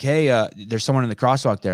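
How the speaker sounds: ordinary talk, nothing marked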